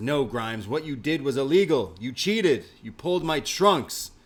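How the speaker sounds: loud, angry voice rising in pitch.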